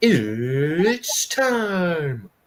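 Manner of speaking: loud, stretched announcer voice. Describing a fight announcer to another speaker: Bruce Buffer announcer voice. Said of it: "He's the guy that goes".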